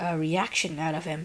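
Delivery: plain reading voice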